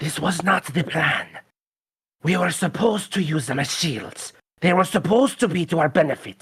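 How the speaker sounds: half-aloud grumbling, muttered half to oneself. Voicing a pacing character muttering to himself: muttering aloud to himself. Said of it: "he will say loud enough that he can hear it, but hopefully they won't".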